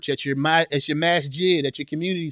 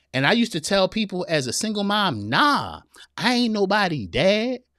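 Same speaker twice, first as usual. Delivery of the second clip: put-on lively, expressive voice with swooping pitch; 4 semitones higher than usual. Reading out a comment in the commenter's voice: imitating Anitra's voice. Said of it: "I'm talking like Anitra, y'all".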